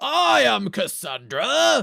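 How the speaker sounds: very loud, huge, rough declaiming voice. Imagining a game's female character voiced like Brian Blessed: Brian Blessed voice. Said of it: "a sexy woman with Brian Blessed's voice".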